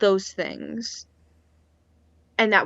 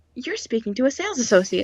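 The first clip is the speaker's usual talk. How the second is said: ordinary delivery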